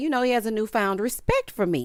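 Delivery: normal talking voice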